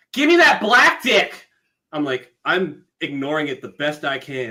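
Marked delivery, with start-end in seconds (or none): 0.2-1.5 furious shriek, very high and very loud. Retelling what a woman screamed once she got angry: imitating an angry woman screaming. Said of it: "So she screams".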